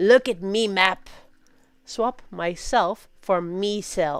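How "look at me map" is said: swashbuckling pirate voice. Showing how to hand a friend a plate: pirate voice. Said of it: "Instead say".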